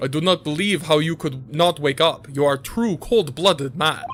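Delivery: terrible, bad, fake put-on Russian accent. The speaker plays a Russian man who dragged someone out of a wardrobe, bad Russian accent. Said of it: "My accents are terrible".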